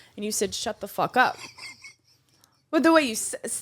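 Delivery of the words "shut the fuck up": imitated rude, angry tone. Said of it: "angry and dismi-, like, very, like, rude".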